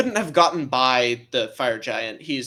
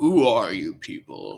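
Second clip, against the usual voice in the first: deep, menacing, intimidating tough-guy voice; 3 semitones lower than usual. Voicing a character who stands up and questions the group: deeper voice, trying to intimidate. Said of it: "He's making his voice deeper".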